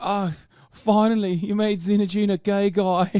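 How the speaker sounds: sobbing, overcome, high crying outburst. Mocking a crying woman on the show: mock crying. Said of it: "she's crying. She's like".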